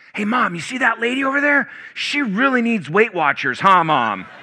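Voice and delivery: shrill, loud, shouting stage whisper. A boy turns and calls to his mom: retelling a shouting whisper. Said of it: "in a shouting whisper".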